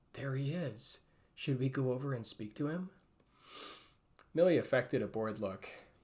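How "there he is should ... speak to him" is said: low, hushed, conspiratorial whisper. Tugging Millie's sleeve, the narrator speaks to her in a low conspiratorial whisper. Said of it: "whispered conspiratorially to her in a low voice".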